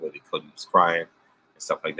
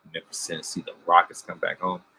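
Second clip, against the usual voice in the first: ordinary talk, nothing marked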